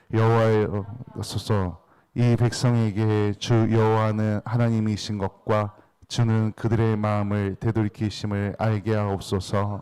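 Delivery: slow, even, single-tone reading in unison.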